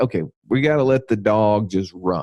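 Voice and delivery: ordinary talk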